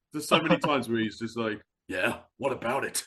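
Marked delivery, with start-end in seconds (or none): 1.8-3.0 dismissive, impatient, can't-be-bothered tone. Imitating Snake in the game, brushing someone off: imitating Snake, dismissive. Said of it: "he's probably dismissive".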